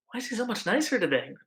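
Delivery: high, half-whispered, hushed-down voice. Character quietly asking Gretel a question, half-whispering quietly. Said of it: "kind of whispers, kind of quietly to Gretel".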